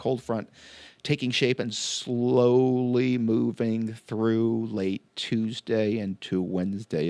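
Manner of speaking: slow, deliberate, unhurried, plodding delivery. Describing a cold front moving through late Tuesday: talking slowly. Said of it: "as I'm talking slow to accentuate".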